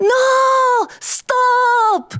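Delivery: shrill, very high, long drawn-out scream on "no". Reading a story, Mr. Lee cries out as a rooster pecks at Golden Eye: screaming. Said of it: "Mr. Lee screamed".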